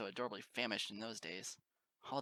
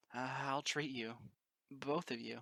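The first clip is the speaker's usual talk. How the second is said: small, warm-hearted little voice; 3 semitones higher than usual. A narrator reads the character speaking to two mares, in a warm little voice. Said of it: "I said in a warm little voice".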